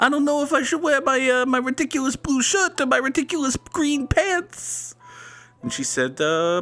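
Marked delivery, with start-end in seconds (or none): 0.0-4.9 put-on caricatured Italian accent, very high-pitched. Voicing a man in an old photo getting ready to go out: offensive Italian accent. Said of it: "we have to do the offensive accent here".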